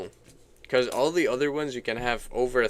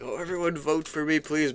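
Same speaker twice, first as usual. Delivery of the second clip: high, pleading, begging tone; 5 semitones higher than usual. Asking whether to tell everyone to vote, acting it out: mock begging. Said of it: "I don't look like I'm begging".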